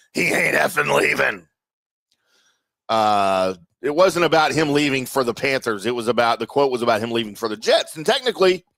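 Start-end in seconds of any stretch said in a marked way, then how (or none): 0.2-1.5 gruff, rough, creaky football coach voice. Retelling a quote about a coach leaving: J P impression. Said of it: "That's my J P impression".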